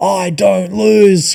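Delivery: high, rough, raspy screaming hype-guru voice. Retelling online coaches on stage selling their courses, imitating someone screaming.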